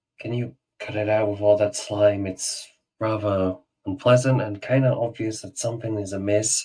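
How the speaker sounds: discreet, confidential tone, like a secret. Role-play character addressing a companion among onlookers: hushed tone. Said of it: "I'll try and like talk in a more hushed tone".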